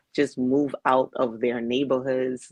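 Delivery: normal talking voice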